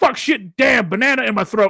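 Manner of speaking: shrill, very high outburst. Retelling what kids hear on stream: imitating Toko. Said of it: "you hear Toko going".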